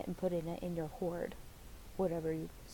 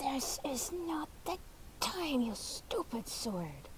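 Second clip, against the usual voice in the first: growling in a pitched-up voice; 8 semitones higher than usual. Narrating a game, voicing a character as she dashes toward him, growling. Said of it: "all the while she's growling".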